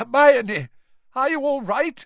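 shaky, very high voice. A man striding toward them calls out to the others, in a shaky voice. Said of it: "His voice sounded shaky".

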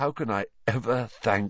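ordinary talk

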